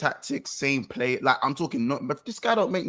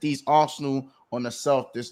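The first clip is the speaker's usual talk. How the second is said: ordinary talk, nothing marked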